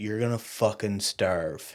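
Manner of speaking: put-on deadpan, straight-faced delivery. Retelling a father's straight-faced warning: imitating a deadpan warning. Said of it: "Straight face".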